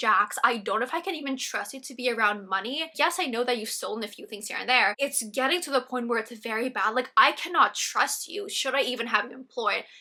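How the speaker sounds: furious, fuming, angry scolding tone. Retelling how an angry boss confronted an employee: imitating someone fuming mad. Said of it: "Lisa is fuming. She's so mad".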